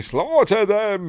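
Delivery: angry regal tone, high pitch, slow pace. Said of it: "And so Xerxes is angry".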